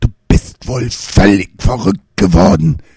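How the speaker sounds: words spat out as a hiss. The brother threatens him in front of their father; hissed. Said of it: "zischte der Bruder".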